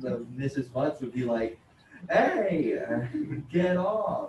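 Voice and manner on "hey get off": very drawn-out, slow, raised, sing-song, swooping scolding tone. Retelling what Missus Butts would say to Isaiah: imitating Missus Butts. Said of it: "that impression sounds just like you".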